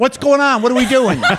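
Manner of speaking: very high, loud, shrill pet-talk shouting. Showing how they talk to their nervous cats, yelling. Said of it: "Because I talk to them like this".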